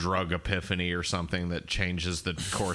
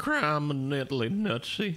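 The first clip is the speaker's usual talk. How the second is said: raised pitch with whistling S sounds; 8 semitones higher than usual. Speaker praises a character's voice, then tries it: Sheriff of Nottingham voice. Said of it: "that's fucking pretty good".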